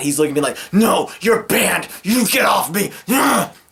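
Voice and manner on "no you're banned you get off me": angry man, seething and hostile. Retelling how the held-down drunk man reacted: imitating an angry man. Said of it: "And he's mad".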